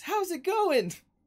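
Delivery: very high, loud, belted anime cartoon-hero voice. Retelling a voice actor answering the main character: Goku voice. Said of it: "with Goku's voice".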